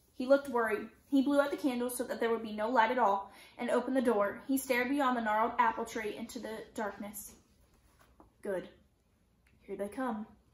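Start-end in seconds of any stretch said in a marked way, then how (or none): 8.4-10.3 low, hushed, relieved murmur. A man stares from an open door into the darkness: low, relieved voice. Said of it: "he said in a low, relieved voice".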